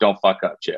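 whispered under the breath. Retelling the coach's words from behind the backfield: imitating a coach whispering. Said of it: "he just whispers underneath his breath to me".

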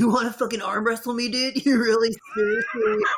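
annoying, threatening frat bro voice. Mocking a game character as a pushy frat guy: imitating a frat guy. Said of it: "a frat guy, like one of those guys".

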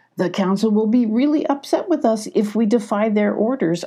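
ordinary delivery

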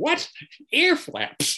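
mock stunned disbelief, voice very high. Retelling his grandfather's reply about ear flaps: imitating incredulous disbelief. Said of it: "He was incredulous".

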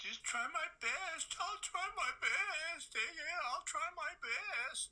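blubbering, tearful crying voice. Repeating back another person's words to them, in a mock crying voice. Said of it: "I don't know why you made the crying voice".

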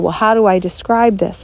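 normal talking voice

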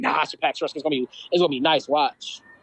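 ordinary talk

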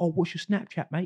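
very high British lad voice. Retelling what a rugby-playing friend from the UK said: imitating Charlie, British. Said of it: "he's like".

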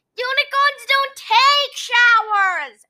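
very high-pitched, shouted voice. [name] protests to Wilbur in the hot room, yelling. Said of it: "[name] yelled".

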